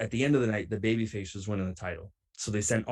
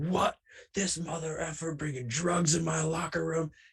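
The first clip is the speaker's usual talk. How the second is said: enraged, furious, high-pitched, all-out scream; 7 semitones higher than usual. Retelling how another wrestler reacted: imitating Maverick Wild screaming. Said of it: "I hear Maverick Wild screaming".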